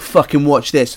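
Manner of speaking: put-on acted drunk voice, boastful tone. Retelling stepping up to a band's big weight at day's end, acting out being drunk. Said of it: "like drunkenly".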